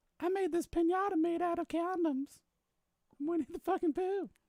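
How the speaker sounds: put-on squeaky creepy voice, pitched way up high. Continuing the comedy bit for the other speaker: creepy pervert Winnie the Pooh voice. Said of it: "You sound like Herbert the pervert".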